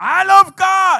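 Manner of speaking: very loud, very high, full-lung scream. Showing the congregation how loud to say it: screaming at full volume. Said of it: "I scream my lungs away".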